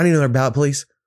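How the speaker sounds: put-on childlike schoolkid voice. Speaker retells a young man at the polling place asking for a ballot, like a child in class. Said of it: "he just sounded like a child in class".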